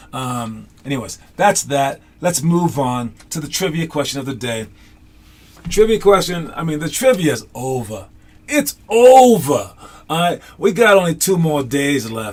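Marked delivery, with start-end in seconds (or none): 10.1-12.3 New York accent, put on. Speaker moving on through the trivia segment: New York accent. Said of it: "That's my New York accent, I guess".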